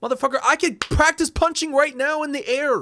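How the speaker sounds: very high, heated, worked-up ranting outburst. A podcaster reacts to a video game's kickboxing feature, worked up. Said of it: "I am getting worked up".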